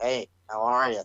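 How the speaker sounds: dull, bored-sounding tone. Comparing a changed wrestler to a cartoon figure: boring Squidward voice. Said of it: "he's just like".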